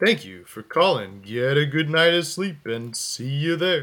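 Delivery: animated cartoon bear character voice. Finishing a teddy bear picnic invitation message, in a Yogi Bear impression. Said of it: "That was my yogi bear impression".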